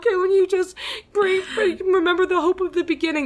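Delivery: high-pitched, loud, fake-crying tearful voice.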